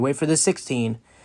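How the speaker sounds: normal talking voice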